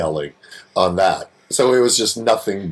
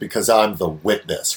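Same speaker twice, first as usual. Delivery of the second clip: firm, put-on delivery. Retelling a scene where an actress turns around: imitating Allison's declarative line. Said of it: "does this declarative".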